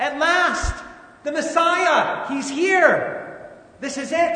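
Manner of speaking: high, loud, thrilled excitement.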